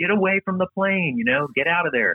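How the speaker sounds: put-on shrill yell, pitched way up, very high. Near a big fire, retelling yelling at him to get away, retelling own yelling. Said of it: "I'm just yelling at him".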